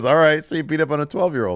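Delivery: play-acted cool, unfazed, nonchalant, unbothered tone. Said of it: "doesn't get mad".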